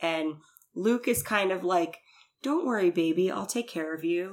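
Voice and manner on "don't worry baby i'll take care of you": mock, weirdly condescending, reassuring tone. Retelling what Luke says in the show: imitating Luke's condescending tone. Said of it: "in a weird kind of condescending way".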